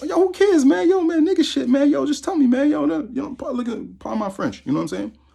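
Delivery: put-on very high, brash young teen kid voice. Retelling what a young kid came up and said: imitating a young kid. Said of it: "He's like".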